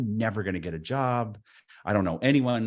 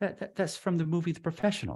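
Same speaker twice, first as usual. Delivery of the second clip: put-on soft, politely earnest British accent; 8 semitones higher, 5 dB quieter than usual. Retelling a man explaining a movie moment to the speaker, in a polite british accent. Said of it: "he's so polite and British".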